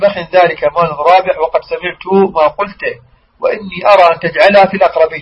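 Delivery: ordinary delivery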